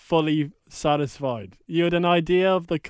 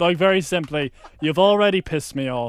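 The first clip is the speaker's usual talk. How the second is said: ordinary delivery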